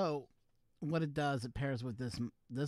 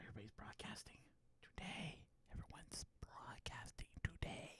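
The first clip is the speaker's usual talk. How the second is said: hushed, very quiet whisper under the breath; 5 semitones higher, 16 dB quieter than usual. Remarking that everyone is broadcasting today: whispering. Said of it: "Why am I whispering?".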